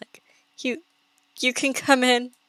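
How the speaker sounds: feeble, frail-sounding, quiet, weak little voice. Narrating a game scene, voicing someone behind a door in a quiet, weak voice. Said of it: "You hear a like quiet, weak voice".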